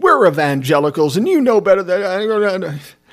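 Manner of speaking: loud put-on Southern accent, drawn out. Retelling a confrontation, quoting the other man: put-on Southern accent. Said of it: "He doesn't really have a Southern accent".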